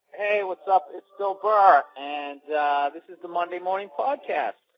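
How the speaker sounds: slightly excited voice. Opening the Monday Morning Podcast, a little excited. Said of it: "I had a little excitement in my voice".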